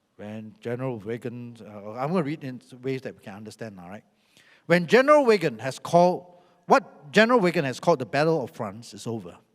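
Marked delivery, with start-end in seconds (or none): 0.2-1.6 dull put-on voice, lower, quieter, slower. Reading a quote aloud to listeners, briefly show the very boring Churchill voice. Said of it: "because he's got this".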